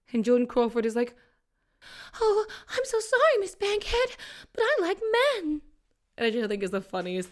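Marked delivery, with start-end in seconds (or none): 2.2-5.6 very high, panicked, squeaky delivery. Retelling an actress turning down an advance: imitating Joan Crawford panicking. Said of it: "that she just panicked".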